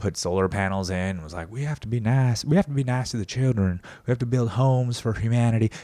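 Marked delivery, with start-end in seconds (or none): 1.5-5.7 put-on genteel Southern Georgia accent. Describing a nice Georgia peanut farmer, imitate his genteel Southern accent. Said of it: "genteel Southern peanut farmer, a farmer from Georgia".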